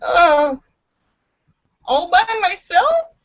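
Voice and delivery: timid, small, high, quavering, trembling voice. Reading a joke aloud, the narrator voices the blonde asking in a small trembling voice. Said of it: "her voice trembles as she asks in a small voice".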